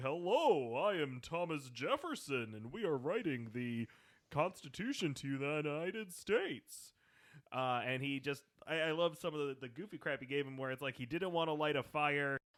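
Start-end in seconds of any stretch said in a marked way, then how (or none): 0.0-6.9 slow, drawn-out, deliberate puppet bird voice. Imitating the show's Thomas Jefferson, who sounds like Sam the Eagle. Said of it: "sounds kinda like Sam the Eagle from the Muppets".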